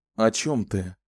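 ordinary delivery, nothing marked

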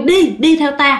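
normal talking voice

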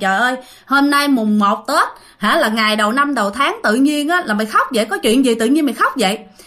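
ordinary delivery

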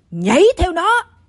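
high-pitched shouting, yelled. Narrator reading a scar-faced pursuer yelling at a man on a rock ledge; shouting. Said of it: "Hắn quát lên".

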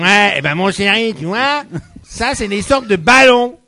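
loud, odd, affected put-on mother voice. Playing a mother answering her child, in a put-on mother's voice. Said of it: "C'est quoi cette voix?".

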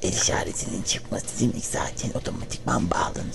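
soft, low whisper.

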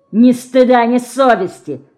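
malicious, spiteful, mocking, smirking delivery. A teenage boy throws Dinka's words back at her: spiteful, smirking. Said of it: "злобно усмехнулся подросток".

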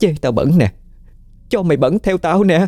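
very high, shrill, piercing voice, ringing like cracked pottery. Smearing greasy hands on a woman's clothes, she taunts her in a shrill, piercing voice. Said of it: "giọng lanh lảnh như cái bát sành vỡ".

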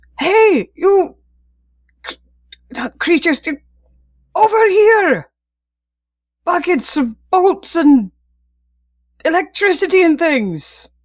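very high, loud shout. Voicing a character luring creatures away from an ally: character shouting for attention. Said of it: "start shouting and making noise".

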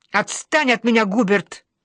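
hot-tempered, flaring up, boiling over. [name] answering Hubert's mocking question, flaring up. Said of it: "вскипаю я".

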